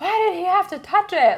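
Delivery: very loud, very high, muffled, choked yell. Retelling a morning outburst while brushing teeth: imitating yelling through toothpaste. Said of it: "yelling through the toothpaste".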